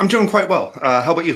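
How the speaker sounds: very high voice, talking through a mouthful mid-chew. Caller joins from the Discord and answers the host while talking while eating. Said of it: "sorry, I'm eating".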